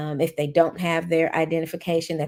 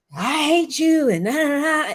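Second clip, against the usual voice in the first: put-on play-acted very high, shrill, loud little boy's yell; 10 semitones higher, 5 dB louder than usual. Teacher retelling how a little boy yelled at them in class: imitating a boy yelling. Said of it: "I had a little boy yell at me".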